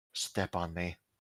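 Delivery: very quiet, faint, very soft voice. Voicing the stairs speaking to a player: faint voice. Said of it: "you hear a faint voice saying".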